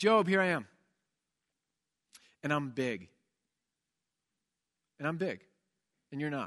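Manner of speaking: put-on blunt, plain, matter-of-fact delivery. Acting out God's reply to Job: imitating God matter-of-factly. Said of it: "he says it very matter-of-factly".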